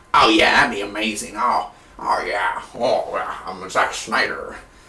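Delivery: deep, unhurried strange voice. Imitating a film director telling an actress to fall: Zack Snyder voice. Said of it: "how does Zack Snyder talk?".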